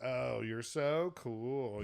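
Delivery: put-on heavy sarcasm, very slow and drawn out. Retelling a girl's remark to someone revving an engine: imitating a sarcastic remark. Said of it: "just being sarcastic".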